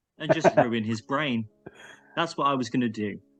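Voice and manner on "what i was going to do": ordinary talk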